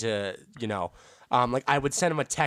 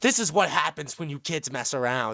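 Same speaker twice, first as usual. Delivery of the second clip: put-on snide, sarcastic, dismissive, lecturing tone; 4 semitones higher than usual. Retelling what a teacher said after the stabbing: imitating a sarcastic teacher. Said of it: "he sarcastically looks at me".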